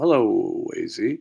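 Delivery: very slow, stretched-out, belted, big booming impression. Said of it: "That was my [name] impression".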